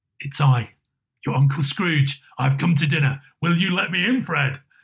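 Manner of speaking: plain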